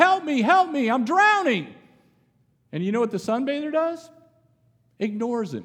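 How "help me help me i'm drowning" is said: high, put-on screaming cry. Retelling a story of a drowning swimmer calling for help: imitating someone screaming. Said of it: "and he starts screaming".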